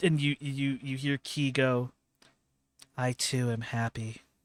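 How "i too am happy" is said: completely flat monotone. Describing how Key answers the master, in Key's flat monotone. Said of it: "but just monotone, just flat".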